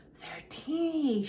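breathy murmur. Watching the tiny wiggling babies, she speaks to her companion: breathed. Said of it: "she breathed".

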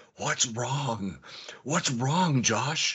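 unhurried, slow, soft half-whisper, no voice. Retelling what the speaker said to Josh as he freaked out, half-whispering words. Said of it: "whisper words".

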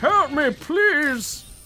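high, slow, whiny pleading tone.

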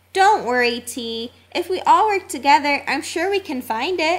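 ordinary delivery

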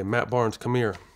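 put-on stern cop voice. Retelling a call heard walking back to the car: imitating a stern voice. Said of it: "It was kinda like a stern voice".

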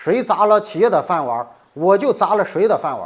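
fierce, spoken through gritted teeth. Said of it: "咬牙切齿地说".

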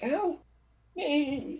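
put-on faint young boy's voice. Narrator voicing a pinned human as the players enter: young boy's voice. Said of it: "In the voice of a boy".

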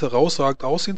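ordinary talk

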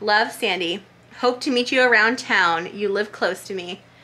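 normal talking voice

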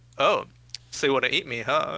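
ordinary delivery

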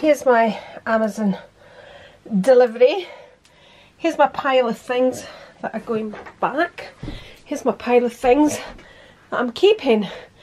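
breathless, winded, out-of-breath speech. Speaker showing her Amazon delivery to viewers, out of breath. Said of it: "I'm out of breath".

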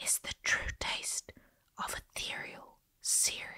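breathy, very quiet whisper, almost inaudible. In a pitch to an audience, dropping to a hushed whisper to praise the product. Whispering.

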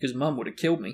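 ordinary delivery

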